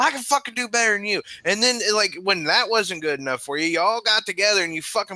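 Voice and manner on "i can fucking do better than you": mock screaming, higher pitch. Retelling competing with a best friend at zombies: imitating screaming at a friend. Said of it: "you're screaming at him like".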